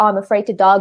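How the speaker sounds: ordinary talk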